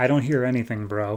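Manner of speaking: ordinary talk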